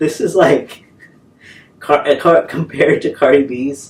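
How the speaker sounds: slow, giggling, laughing through the words. Comparing a music video to another while laughing: laughing while talking. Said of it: "I'm sorry, I can't stop laughing".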